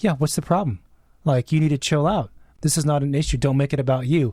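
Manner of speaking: ordinary talk, nothing marked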